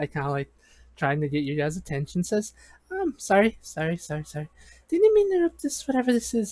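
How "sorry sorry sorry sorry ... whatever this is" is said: high, swooping, sing-song nice-lady voice. The narrator voices the knight in training interrupting the group, Selena voice. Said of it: "It is a nice knight lady".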